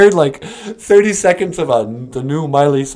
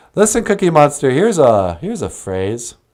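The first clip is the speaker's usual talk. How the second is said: plain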